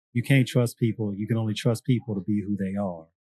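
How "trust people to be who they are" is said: normal talking voice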